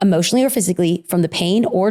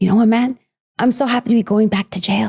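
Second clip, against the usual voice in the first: put-on thick, heavy Mexican accent. Retelling the dad's remark on the flight to Lubbock, in a thick Mexican accent. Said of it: "my dad in his thick Mexican accent".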